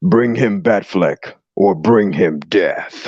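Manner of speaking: very slow, drawn-out character voice, every word dragged. Relaying someone's message in a Necron voice. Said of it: "let me do a like nice little Necron voice for you".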